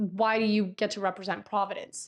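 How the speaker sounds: plain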